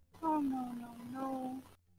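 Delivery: uneasy, alarmed, worried, anxious dismay. A character in a role-play scene reacts at once, worried. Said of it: "You sound worried".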